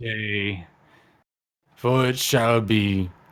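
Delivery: slow, drawn-out, ominous, menacing tone. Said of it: "I don't know how you say it menacingly".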